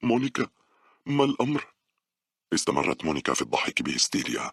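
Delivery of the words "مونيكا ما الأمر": very high-pitched, frightened, fearful voice. Speaking to a woman who keeps laughing hysterically, fearful. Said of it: "سألتها باولا بخوف".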